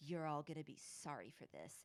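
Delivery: sheepish, embarrassed, awkward delivery. Retelling a TV scene, quoting a judge's threat at his party: imitating someone quiet and embarrassed. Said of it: "Taft quietly and embarrassedly goes".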